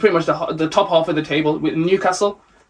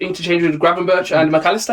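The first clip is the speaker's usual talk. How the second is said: ordinary talk, nothing marked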